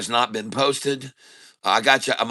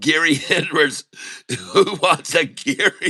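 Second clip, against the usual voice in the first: high voice, laughing and cracking up throughout; 5 semitones higher than usual. Reading a viewer's message aloud: laughing while reading. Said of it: "I can't even read this".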